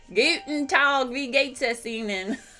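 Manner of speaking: put-on over-the-top Texan accent in German. Imitating Texans speaking German in a German class, exaggerated Texan accent. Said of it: "their accent, and I exaggerate, was sort of like".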